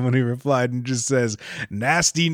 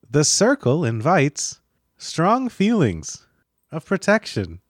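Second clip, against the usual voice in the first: put-on sing-song text-to-speech voice. Imagining a tutorial redone on TikTok, the speaker narrates it in the TikTok voice. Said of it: "with the TikTok voice telling you".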